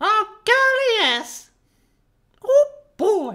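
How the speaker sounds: voice going way up into cartoon pitch. Speaker voices a character being questioned by another: Mickey Mouse voice. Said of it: "I'm making him sound like Mickey Mouse".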